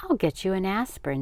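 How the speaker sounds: ordinary delivery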